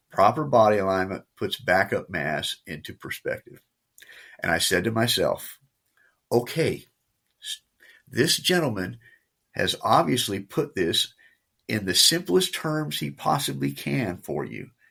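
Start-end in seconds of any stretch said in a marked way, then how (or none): none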